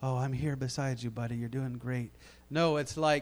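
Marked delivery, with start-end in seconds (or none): 0.0-2.1 very quiet, low, soft, steady small half-whisper. Describing how the Lord's voice might speak on the job: soft steady half-whisper. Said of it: "nice, small, steady whisper like".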